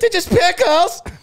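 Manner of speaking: very high, shrill, weird screaming voice. Retelling a show moment, the speaker quotes Maury: Maury's weird screaming voice. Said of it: "Maury's fucking weird ass voice that he does".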